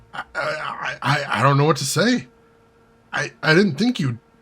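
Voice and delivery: stammering voice. Janet, surprised at being spared, steps forward and answers with a stuttering voice. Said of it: "Her voice stutters".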